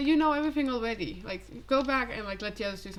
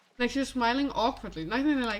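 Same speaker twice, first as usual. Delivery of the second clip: ordinary delivery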